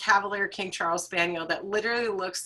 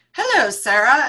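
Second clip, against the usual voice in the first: put-on English accent, higher and louder; 6 semitones higher, 9 dB louder than usual. Retelling how a friend greets a plant on FaceTime: imitating an English accent. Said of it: "she does this English voice like".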